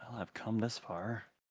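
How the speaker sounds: hushed, private murmur under the breath. In a tabletop game, a player's character stares at a message and whispers to himself. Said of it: "whispers to himself".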